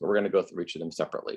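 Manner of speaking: fast, quiet rush.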